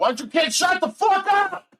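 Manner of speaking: very high, rising holler. Yelling out the window at noisy neighbor kids: yelling out the window. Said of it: "I gotta yell out the window".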